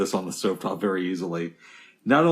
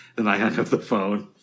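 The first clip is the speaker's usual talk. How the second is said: plain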